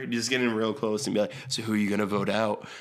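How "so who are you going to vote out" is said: put-on whisper. Retelling how a player leaned in close and asked: imitating someone whispering.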